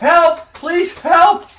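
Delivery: frantic, very high, very loud cry. A game narrator voices someone running up from the roadside, louder shouting. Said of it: "the voice gets louder".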